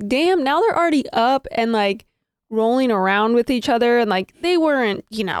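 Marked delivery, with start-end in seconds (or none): none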